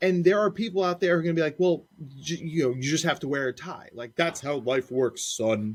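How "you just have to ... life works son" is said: stern, fatherly lecturing dad voice. Imitating people who insist a boy must wear a tie, dad voice. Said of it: "Dad voice".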